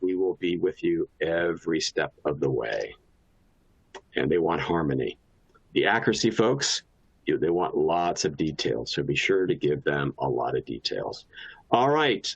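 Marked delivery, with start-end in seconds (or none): 0.0-2.9 slow, drawn-out, slowed-down speaking voice. Demonstrating how to speak to the kind folks; slowed-down voice. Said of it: "will slow our voice down and say".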